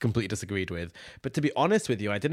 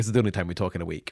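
ordinary talk

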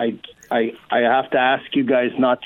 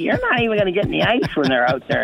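squeaky bark, pitched up and swooping; 7 semitones higher than usual. Retelling a teammate snapping back at his prediction, imitating Hitch's squeaky barking. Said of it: "Hitch is barking back at me".

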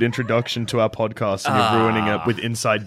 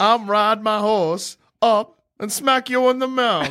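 wandering, slipping fake Texan accent, very high; 11 semitones higher than usual. Improvising a comic bit, taunting Dormammu, in a wandering put-on Texan accent. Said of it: "I don't know what accent I'm doing anymore".

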